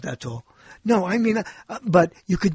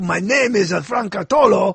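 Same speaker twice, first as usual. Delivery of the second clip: English spoken with a French accent; 4 dB louder than usual. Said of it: "then I say it with the accent".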